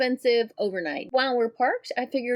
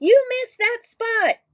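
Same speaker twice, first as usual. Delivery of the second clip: high, loud, nitpicking, critical yell; 12 semitones higher, 6 dB louder than usual. Showing what not to yell at the driver from the passenger seat: mock yelling at the driver. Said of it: "don't go yelling stuff at him like".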